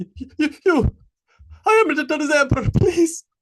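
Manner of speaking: very high, shrill, loud, terrified whimpering. The emperor, caught praying at the altar, answers Harold in a horrified, fearful plea. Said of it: "ceased his whimpering and turned in horror".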